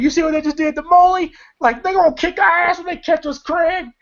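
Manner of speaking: mock shrill, frantic, very high panicked scream. Retelling a movie scene after a beating: imitating Day Day screaming. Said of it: "Day Day's screaming".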